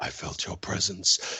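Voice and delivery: breathy, slowly drawn-out speech. Telling a joke's punchline where the character does the voice: Darth Vader voice. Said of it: "he does the voice".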